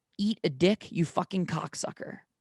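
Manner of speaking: sudden loud screaming outburst. Retelling what they screamed while dreaming, before being woken, retelling a scream. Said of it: "I screamed".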